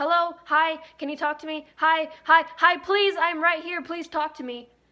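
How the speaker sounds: loud, high-pitched yell. Retelling trying to get a doctor to listen: retelling own yelling. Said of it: "yelling at him".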